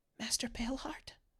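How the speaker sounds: very quiet, soft, breathy whispered call. Voicing someone hidden inside a tunnel, calling out: whispering. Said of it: "you hear a whisper from inside the tunnel".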